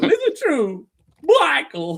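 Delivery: drawn out, swooping up high. Retelling a TV scene's line: Silvio's Michael Corleone impression. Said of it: "And then he goes".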